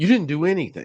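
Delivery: mock insistent, high, argumentative arguing back. Retelling arguing with the doctor after the procedure: imitating arguing. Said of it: "I'm arguing with him".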